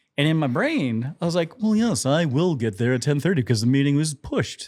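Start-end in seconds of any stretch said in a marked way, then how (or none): 1.6-4.7 put-on English accent. Retelling inner thoughts while driving to a meeting: put-on english accent. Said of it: "every time I tell this story to myself, I have an English accent".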